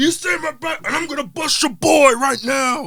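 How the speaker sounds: evil voice, pitched high. Retelling a wrestler's promo threatening MVP, imitating Braun's evil voice. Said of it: "he said all evil voice".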